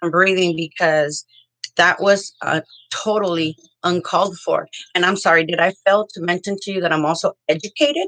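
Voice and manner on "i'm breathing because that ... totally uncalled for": ordinary delivery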